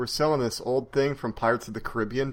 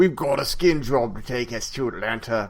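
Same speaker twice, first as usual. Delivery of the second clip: put-on Australian accent sliding into East London accent. Imitating a game character's accent: attempted Australian accent. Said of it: "that was more like East London".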